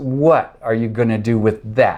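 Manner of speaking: ordinary delivery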